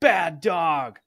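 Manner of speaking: very loud, shrill, scolding yell. Retelling how Athena yelled at the new puppy: imitating Athena yelling. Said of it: "start yelling".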